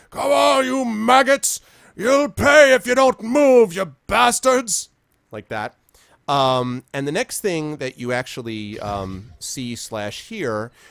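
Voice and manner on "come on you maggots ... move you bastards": very high-pitched, loud, roaring bellow. Describing a shout the listeners hear, bellowing. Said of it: "this bellowing of".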